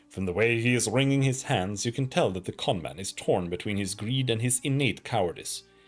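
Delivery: ordinary delivery, nothing marked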